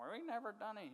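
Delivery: mock, silly, self-righteous, high, judgmental voice. Retelling a man mimicking judgmental people in church, funny mocking voice. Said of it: "He talked that funny voice like you talk".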